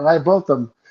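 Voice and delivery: ordinary talk, nothing marked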